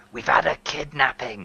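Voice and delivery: hushed voice. Telling another character there has been a kidnapping: whispering. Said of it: "Why are you whispering?".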